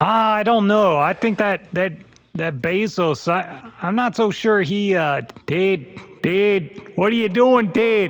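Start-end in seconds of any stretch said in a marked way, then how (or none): 5.5-8.1 put-on Milwaukee accent. Joking around and calling out to Ted in a fake Milwaukee accent. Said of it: "I sound like I'm from Milwaukee".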